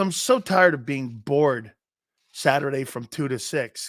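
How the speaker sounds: ordinary delivery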